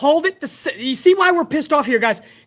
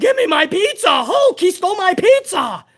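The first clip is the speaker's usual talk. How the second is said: put-on yelling wrestler voice, higher pitched; 4 semitones higher than usual. Imagining Zeus yelling that his pizza was stolen: imitating Zeus yelling. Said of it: "And Zeus yelling".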